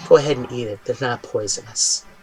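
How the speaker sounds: close, soft whisper right at the ear. Voicing the Chimera speaking into a player's ear: whispering in the ear. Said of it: "you hear a whisper in your ear".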